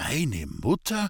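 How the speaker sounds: long, drawn-out, stretched-out words. Young man echoes the sobbing girl's answer back to her, in a drawn-out tone. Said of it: "in langgezogenem Tone".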